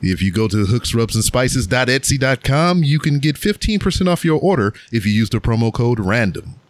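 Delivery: polished, smooth, professional announcer ad-read delivery. Asked who today's sponsor is, the speaker reads the promo: professional announcer voice. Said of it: "You like my professional voice there".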